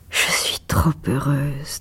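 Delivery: soft murmur. A woman, fallen onto a divan with hands over her eyes, murmuring.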